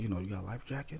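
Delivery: very quiet, hushed half-whisper. Retelling asking the guy for a life jacket: imitating own half-whisper. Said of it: "and I whispered to him".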